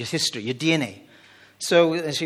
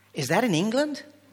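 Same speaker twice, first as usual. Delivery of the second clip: very high, put-on, attempted American accent; 9 semitones higher than usual. Welsh speaker retelling Americans' question in the States, in an attempted American accent. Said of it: "I don't do American accent".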